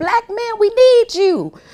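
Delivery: mock shrill, very high scream. Retelling how a celebrity changed her tune, imitating Taraji P. Henson screaming. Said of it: "now she's screaming".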